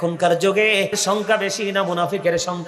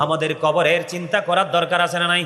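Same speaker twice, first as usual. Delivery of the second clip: usual speaking voice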